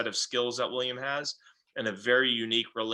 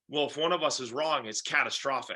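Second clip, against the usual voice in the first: ordinary delivery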